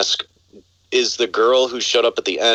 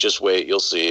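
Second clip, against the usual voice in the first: usual speaking voice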